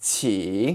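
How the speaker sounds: qi dips low then rises. Tone lesson building up the word qi, dipping tone on qi. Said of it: "add a dipping tone".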